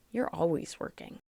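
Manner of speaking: put-on whisper, hushed, breathy, disappointed murmur. Recounting a daughter's reply after being put off until after work, imitating a disappointed voice. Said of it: "in such a disappointed voice".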